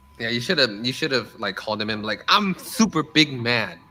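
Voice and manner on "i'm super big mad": very slow, dragged-out voice. Suggesting how to complain about a canceled pre-order: b j voice. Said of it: "And give him the B J voice".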